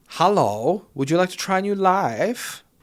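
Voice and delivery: campy voice, the word life drawn out. Retelling how a man was asked to join a program: campy guy voice. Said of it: "that's not Chinese accent. It's just a camp guy".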